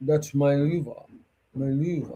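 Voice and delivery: deep, throaty, guttural, theatrical rumble. Speaker demonstrates how a theatrical actor delivers the line, in a deep guttural voice. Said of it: "deep tone, and then even more guttural".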